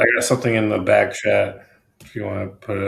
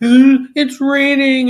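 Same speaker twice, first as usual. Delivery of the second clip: high, slow, mock crying. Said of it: "hear him quacking and crying".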